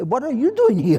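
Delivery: very high, loud laughing call.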